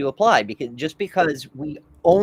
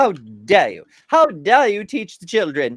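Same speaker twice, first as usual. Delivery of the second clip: put-on British accent, sounding more educated; 4 semitones higher, 4 dB louder than usual. Speaker acts out Kent's views in conversation, Kent in a British accent. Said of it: "I don't know why Kent is British now".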